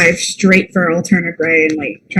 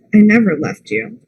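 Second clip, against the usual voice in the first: sorrowful, sad voice; 3 semitones higher than usual. Voicing a character answering their double's accusation of abandonment: sad, in character. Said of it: "That's gonna make Gray, like, real sad".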